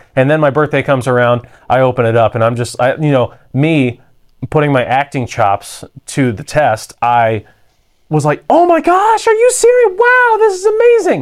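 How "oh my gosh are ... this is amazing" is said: put-on very high voice of a six-year-old child. Retelling opening a birthday present as a kid: six-year-old child voice. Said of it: "in my 6-year-old voice".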